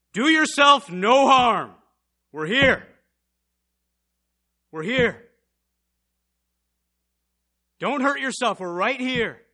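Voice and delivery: very loud, high-pitched calling out. Speaker retells Paul calling out to the jailer, retelling a loud shout. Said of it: "he says with a very loud voice".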